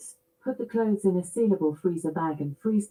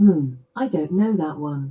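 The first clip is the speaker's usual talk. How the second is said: slow, raised smart-speaker assistant voice; 3 semitones lower, 5 dB louder than usual. Asked another question, answering it: Alexa accent. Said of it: "I'll answer in my Alexa accent".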